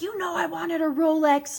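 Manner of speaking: put-on raging, furious, screamed outburst. Retelling how a father screams at his son over a gift: imitating someone screaming. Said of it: "starts screaming at his son's face".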